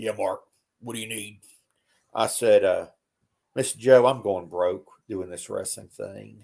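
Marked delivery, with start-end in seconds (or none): 0.0-1.4 deep voice, soft and quick. Retelling a phone call, speaker quotes Jody Hamilton answering him, deep voice. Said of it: "he had this deep voice".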